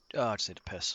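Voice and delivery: quiet muttering and mumbling under breath. Playing a character who wanders off: muttering under his breath. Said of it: "What did you mutter?".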